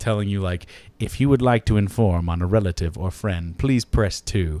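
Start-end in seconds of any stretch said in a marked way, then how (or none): 1.0-4.6 automated, robotic female voice. Retelling the recorded message heard after calling the number: robotic female voice. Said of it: "this Robo Girl voice".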